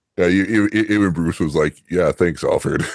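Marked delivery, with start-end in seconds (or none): 1.9-2.8 mock sarcastic delivery. Retelling how Bruce answers Alfred, imitating Bruce's sarcasm. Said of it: "noting the sarcasm".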